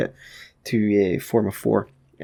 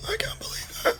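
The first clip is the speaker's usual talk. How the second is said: odd, very high, soft whisper. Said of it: "I don't know why I'm speaking like that".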